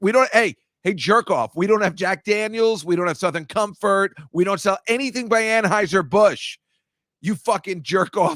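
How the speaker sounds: high, angry, furious yelling. Retelling the owner yelling at the speaker's group, imitating someone yelling. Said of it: "did she not start yelling and being like".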